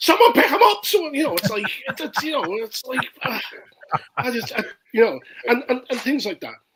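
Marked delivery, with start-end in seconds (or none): 0.0-1.1 shrill, very loud, high-pitched screaming yell. Complaining about a team's play, retelling own scream. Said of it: "I'm screaming".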